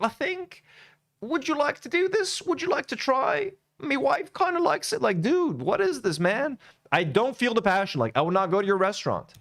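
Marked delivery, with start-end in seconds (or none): 0.0-5.0 mock, very high, tentative and hesitant. Mocking a cook who makes everything a suggestion: imitating a tentative suggestion. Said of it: "Everything he says is like a suggestion".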